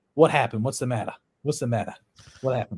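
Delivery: put-on New York accent with New York vowels. Retelling a bar story, quoting the warden coming out of the bathroom, new york accent. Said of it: "she says in her New York accent".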